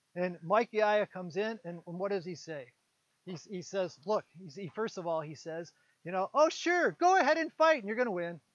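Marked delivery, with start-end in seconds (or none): 6.4-8.4 dripping with sarcasm, pitched-up sarcastic delivery. Retelling a man's reply to the group before the fight, with mock sarcasm. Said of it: "they all realize he's being sarcastic".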